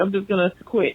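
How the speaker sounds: ordinary talk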